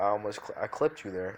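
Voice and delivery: ordinary delivery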